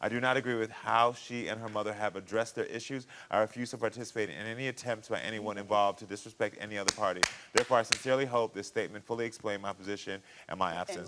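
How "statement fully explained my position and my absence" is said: ordinary talk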